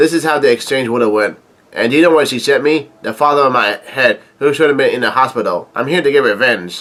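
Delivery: ordinary talk, nothing marked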